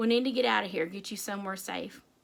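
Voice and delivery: ordinary delivery, nothing marked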